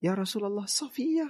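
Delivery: put-on high-pitched young woman's voice.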